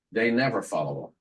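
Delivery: low-key, understated, quiet delivery. Retelling a phone call, imitating Anna speaking very quietly. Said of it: "she says this in a very quiet way".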